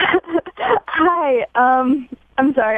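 hesitant, very drawn-out, high and slow nervousness. Greeting a radio host on a call-in line, nervous. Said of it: "I'm really nervous".

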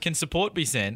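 plain

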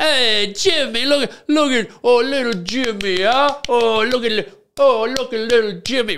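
put-on high, fussing voice with an Italian accent. Comparing it to meeting an italian kid at a wedding, imitating an italian wedding guest. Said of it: "meeting an Italian kid for the first time at an Italian wedding".

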